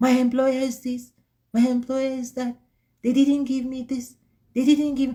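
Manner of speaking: high, powerless, disempowered complaining voice. Speaker imitating how some people talk about their employer, imitating a disempowered voice. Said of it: "You can hear that voice is so disempowered".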